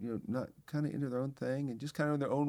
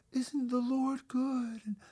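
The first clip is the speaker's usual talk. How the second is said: airy, high, drawn-out worship-leader voice; 11 semitones higher, 3 dB louder than usual. Showing how people talk when praying aloud with eyes closed, in an airy, high worship-leader voice. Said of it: "use this worship leader voice and I'll just get airy and high".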